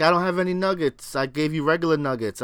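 ordinary talk

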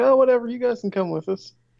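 nonchalant, unbothered delivery.

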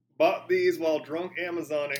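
put-on Western-sounding accent. Others ask for a Texan accent; reading the line in a Western accent. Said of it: "that's a Western accent".

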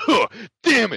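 very high, very loud, frustrated and disappointed yell. Retelling someone slapping the mat after tapping out: imitating a disappointed outburst. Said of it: "so disappointed in how he reacted".

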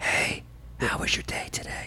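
very soft, breathy, barely audible whisper. Imagining coming home from work and greeting the kids: mock whispering. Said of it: "you just started whispering to your kids".

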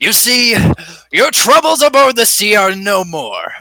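loud, lofty, grandiose heroic delivery. Playing a character raising a rapier in salute, in a grandiose voice. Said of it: "Talk grandiose".

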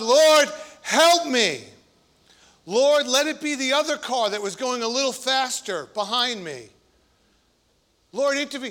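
play-acted, desperate, crying-out pleading. Acting out praying while pulled over for speeding: acting out crying out to God. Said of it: "you're crying out to God".

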